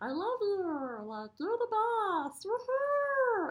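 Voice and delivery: goofy, very high-pitched, very slow, drawn-out voice. Describing simple fun things to do, the speaker demonstrates talking in a silly voice. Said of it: "I'll talk in this silly voice".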